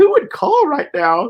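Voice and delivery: mock weepy crying voice, pitched way up. Retelling a partner in labor asking who would call: imitating someone crying. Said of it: "my ex is, like, crying".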